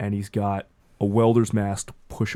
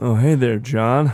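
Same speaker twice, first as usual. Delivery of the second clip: weird twang, higher and louder; 3 semitones higher, 7 dB louder than usual. Voicing Carl as he greets the group, with Carl's weird twang. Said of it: "weird kind of twang".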